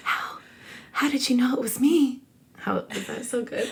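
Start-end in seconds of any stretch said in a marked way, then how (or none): 0.0-2.2 sexy, breathy whisper, pitched up. Rereading the line after a retry: whispered line, sexier take. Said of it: "That sounded way sexier".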